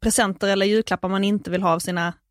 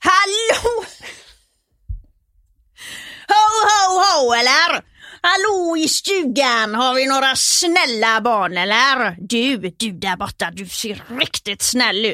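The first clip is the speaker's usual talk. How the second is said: Gothenburg Swedish accent; 5 semitones higher, 3 dB louder than usual. Performing the Gothenburg dialect the speaker's mother likes to hear: Gothenburg accent. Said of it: "mamma vill ofta att jag ska prata göteborgska".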